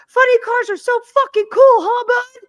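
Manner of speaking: very high, loud, full-throated screaming yell. Retelling how a racer greeted another driver after winning: imitating someone screaming. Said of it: "screamed at the top of his lungs".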